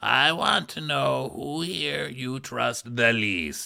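put-on Miami accent, heavy in the throat. Repeating a line just heard on the show: imitating a throaty Miami voice. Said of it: "We hear a very throaty Miami voice".

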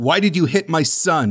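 put-on, ominous, menacing, threatening voice. Retelling a movie scene where a father asks why his son was hit: imitating a menacing tone. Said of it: "in a menacing tone".

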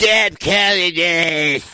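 heavy smoker voice, word "this" drawn out. Retelling how a woman answered spam calls: imitating Angie's smoker voice. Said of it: "she sounds like that".

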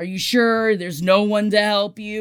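put-on irritated, put-upon, grudging, annoyed man's voice. Retelling a man's reply over an intercom: imitating an annoyed man. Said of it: "The man's voice sounded really annoyed".

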